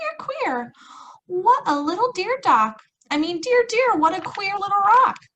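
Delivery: tiny, very high squeaky mouse voice. Narrating a story, the sleeping father wakes to hear a mouse: little mouse voice. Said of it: "heard a little voice saying".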